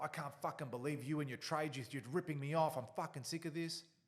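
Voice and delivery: acted, loud, high, furious angry rant. Retelling what a client said during the covid years: imitating an angry client. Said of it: "a client would crack the shits".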